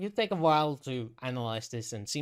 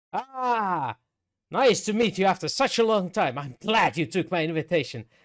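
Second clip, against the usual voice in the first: very loud, booming, jolly, pitched-up creature voice, long "ah"; 6 semitones higher, 8 dB louder than usual. Storyteller voicing a rock creature welcoming a long-awaited guest, cheery rock creature voice. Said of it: "with a cheery disposition, coming over and say".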